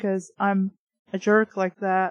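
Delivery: ordinary delivery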